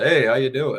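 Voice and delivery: loud, high, over-the-top radio announcer voice. Retelling a random meeting where Johnny greeted them: Johnny's super radio voice. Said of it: "he said in his radio, super radio voice".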